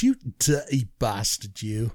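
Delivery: low, soft put-on monkey-in-trauma accent. Asked by another speaker to repeat his phrase in a monkey in trauma accent. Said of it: "You have to speak in a monkey in trauma accent".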